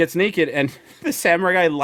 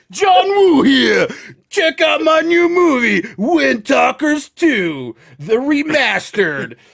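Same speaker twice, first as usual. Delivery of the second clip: high, put-on Italian-guy accent, hyped-up; 9 semitones higher, 4 dB louder than usual. Pretending to be John Woo plugging his new movie, do a John Woo voice, sounding Italian. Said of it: "why does John Woo sound like the Italian guy?".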